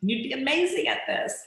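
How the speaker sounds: animated, enthusiastic, excited tone, pitched high. Demonstrating the tone used when offering, lively and excited. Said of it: "When I was offering, it was lively and excited".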